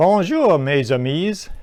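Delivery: awful put-on French accent. Greeting viewers in French in honor of the Tour de France: awful French accent. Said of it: "forgive my awful accent".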